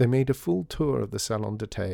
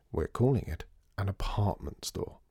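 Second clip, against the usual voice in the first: ordinary delivery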